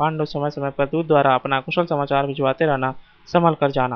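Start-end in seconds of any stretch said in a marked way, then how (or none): none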